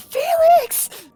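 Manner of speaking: very high, loud, frantic, panicked yell. Acting out what Sophie will yell this round, in a mock-panicked Sophie voice. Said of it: "In a panicked Sophie voice, she's just gonna yell".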